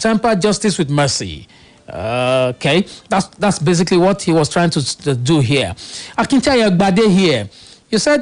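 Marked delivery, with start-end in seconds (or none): none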